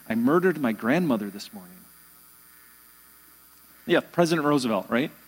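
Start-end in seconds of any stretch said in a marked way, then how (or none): 0.1-1.8 low, mumbled murmur, half under the breath. Retelling what the president would say to passing guests, murmured. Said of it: "he would murmur this".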